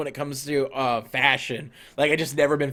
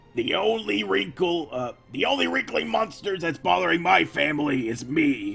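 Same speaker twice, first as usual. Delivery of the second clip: halting put-on voice that stumbles and restarts; 3 semitones higher than usual. Doing Gravity Falls impressions that viewers asked for: Grunkle Stan voice. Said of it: "I can kinda do Grunkle Stan, maybe".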